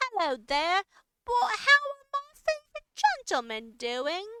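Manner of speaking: very loud, swooping lady's voice. A speaker calls to the guy standing outside the gate, imitating her voice. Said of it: "I did her voice".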